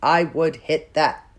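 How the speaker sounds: dead-level, flat, uninflected monotone. Demonstrating a phrase aloud with no punctuation, no inflection at all. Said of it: "No inflection at all".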